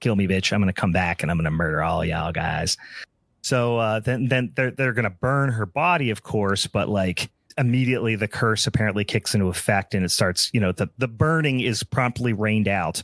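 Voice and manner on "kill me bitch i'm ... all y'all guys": put-on unrepentant, defiant voice, lower. Retelling a character who refuses to ask forgiveness: imitating an unrepentant defiant character. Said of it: "She's not asking for forgiveness".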